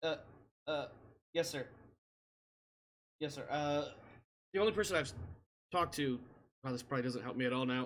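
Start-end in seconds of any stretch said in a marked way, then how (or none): 0.0-6.2 embarrassed, flustered, stumbling and stammering. Voicing a crew member caught out by a superior: flustered and embarrassed. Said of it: "face flushes red".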